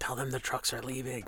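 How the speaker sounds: soft, very quiet half-whisper. Speaking quietly to an ally in character: half-whispering. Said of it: "I whisper to Ash and go like".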